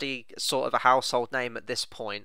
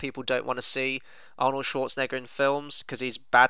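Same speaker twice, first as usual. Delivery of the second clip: plain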